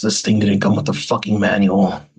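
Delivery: grumbled under the breath, to oneself. Playing a character annoyed by a device: muttering in character. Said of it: "Tibble just mutters".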